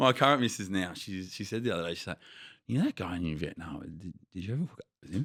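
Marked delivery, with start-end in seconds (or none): 2.7-5.3 low, calm, mild, placid, gentle voice. Retelling how his current missus asked him a question: imitating placid, gentle asking. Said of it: "she did it really placid and gentle".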